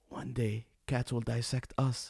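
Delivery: put-on whisper. Retelling what a silent friend sitting next to them said: imitating a whisper. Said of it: "came next to me and whispers".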